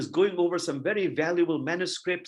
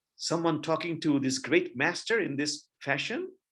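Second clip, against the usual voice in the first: ordinary delivery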